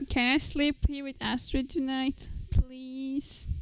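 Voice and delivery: put-on sulky child voice. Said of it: "He's, like, pouting".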